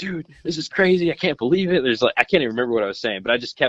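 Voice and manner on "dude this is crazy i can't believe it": put-on high, excited, prolonged freak-out. Retelling what they kept saying beside a silent companion, retelling freaking out. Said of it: "I was just freaking out".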